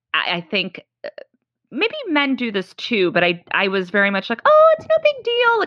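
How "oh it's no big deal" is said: very high, loud, squeaky dismissive voice. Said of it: "my voice is going up twenty octaves".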